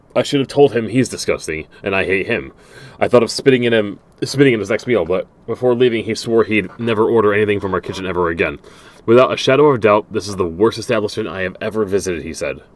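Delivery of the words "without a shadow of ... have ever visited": ordinary delivery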